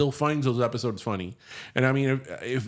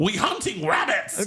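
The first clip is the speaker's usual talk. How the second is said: angry, high, pitched-up cartoon hunter voice; 7 semitones higher than usual. Doing cartoon voices and mixing two characters up: angry Elmer Fudd voice. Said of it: "Why is your Elmer so angry?".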